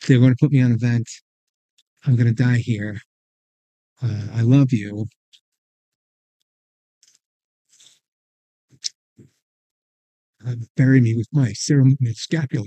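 choked up, fighting back tears while speaking. Recounting his wife's tearful phone call to a listener, fighting back tears. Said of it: "Take your time".

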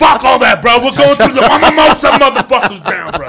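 put-on gruff comic voice. Acting out a car ride for the others: Joey Diaz driving impression. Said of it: "the Joey driving".

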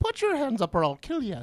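high, laid-on, put-on leprechaun-style Irish accent. Guessing how an Irish mobster sounds, the speaker tries a leprechaun accent. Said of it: "But with like a leprechaun accent?".

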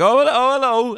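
put-on excitement. Retelling greeting someone as the doors open, faking enthusiasm. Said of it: "I would kind of have to fake my enthusiasm".

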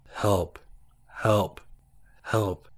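even, flat, unpanicked monotone. Walking in pitch dark, the narrator hears a voice calling: flat monotone voice. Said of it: "It was a monotone voice repeatedly asking for help".

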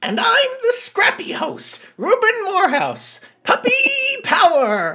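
very high, swooping, sing-song, annoying puppy voice. Third host introduces himself on the Scooby-Doo movie show, in a Scrappy-Doo voice. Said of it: "Three very not annoying voices".

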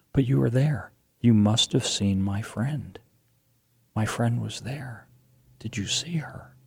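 little hushed voice. Retelling a woman pressing them about whether they saw her friend, in her small quiet voice. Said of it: "this little quiet voice".

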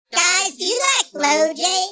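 put-on chipmunk voice. Making a crank call while pretending to be Alvin: Alvin voice. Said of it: "it's me, Alvin, from Alvin and the Chipmunks".

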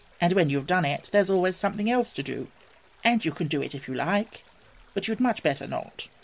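ordinary delivery

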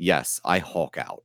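soft, slow, totally straight delivery. Recounting a conversation, the speaker quotes Gaunt's answer in complete seriousness. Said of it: "in complete seriousness".

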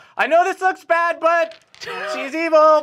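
very high-pitched, loud battle yell. Jumping down with a sword in character: yelling in character. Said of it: "and yell".

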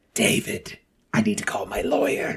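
put-on gravelly celebrity voice. Doing a Harvey Fierstein voice on request: Harvey Fierstein impression. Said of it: "your unintentional Harvey Fierstein from losing your voice".

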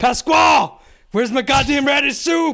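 mock very high, loud screamed delivery. Acting out a figure yelling through a service window: screaming. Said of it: "he's, like, screaming at him".

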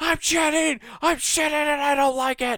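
put-on furious yelling. Imagining the Mad Pooper angry while pooping: imitating someone yelling angrily. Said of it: "He's just yelling".

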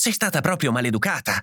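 brisk, quick, hushed whisper. Narrator reads a mother who ran to her daughter, in a brisk whisper. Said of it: "sussurrò sbrigativamente".

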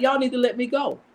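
put-on tearful, pleading whine through sobs. A social worker retelling what he said in court, imitating someone crying. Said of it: "he's crying like".

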